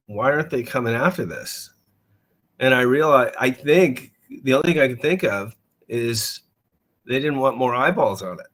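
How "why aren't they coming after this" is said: ordinary talk, nothing marked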